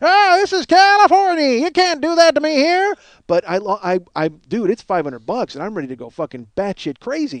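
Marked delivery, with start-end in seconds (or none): 0.0-2.9 put-on very high, loud, shrill old prospector voice. Retelling own complaint about an expired gift card: old prospector voice. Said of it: "Like some old prospector from the Met".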